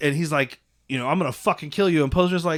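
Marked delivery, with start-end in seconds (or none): none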